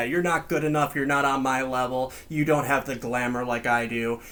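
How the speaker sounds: ordinary talk, nothing marked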